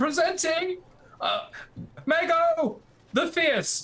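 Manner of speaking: very high, drawn-out voice that pops and breaks. Storyteller voices a character stepping forward before onlookers, high-pitched voice that cracks. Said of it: "in a kind of high pitched voice that pops once or twice".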